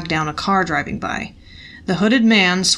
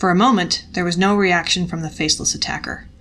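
ordinary delivery, nothing marked

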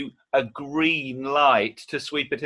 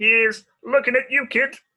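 very high put-on little frog puppet voice; 9 semitones higher, 3 dB louder than usual. In an impressions guessing game, the speaker does a Casablanca line: Kermit the Frog impression. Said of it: "that was Kermit the Frog in Casablanca".

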